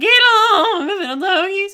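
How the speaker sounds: very high, very loud, drawn-out cowboy holler. Talking about horse-drawn buggies, the speaker repeats a chuck wagon driver impression. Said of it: "my impression of a chuck wagon driver".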